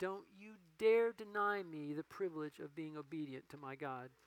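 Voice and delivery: gentle, sweet voice with a firm, stern scolding edge. Retelling a woman's words as she hands over her tithe: imitating a sweet but stern rebuke. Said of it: "looks at me very sweetly, but with a very stern rebuke says".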